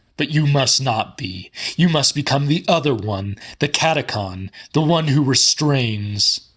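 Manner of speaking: sermon-style preaching delivery as from a pulpit. The Reverend stands up from the bed and addresses Andrew, preaching as from a pulpit. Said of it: "The Reverend [name] suddenly stood up from the bed, / The Reverend [name] suddenly stood up from the bed, / as though he stood at the pulpit of his church".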